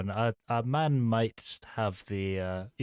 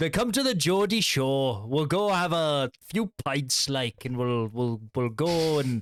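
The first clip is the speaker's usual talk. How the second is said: put-on Newcastle Geordie accent; 3 semitones higher than usual. Doing an accent on request amid cross-talk: geordie accent. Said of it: "give us Geordie".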